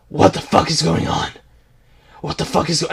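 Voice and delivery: put-on gruff hero voice. Mocking a game character's lines in a Batman voice. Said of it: "Stop using the Batman voice!".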